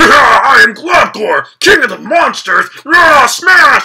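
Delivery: loud, very slow, angry, gnarly, booming scary monster voice. Describing the voice expected for Globgor, doing a mock-angry Globgor voice. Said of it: "the voice he had when he got all angry was like".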